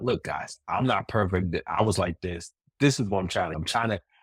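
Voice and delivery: ordinary talk, nothing marked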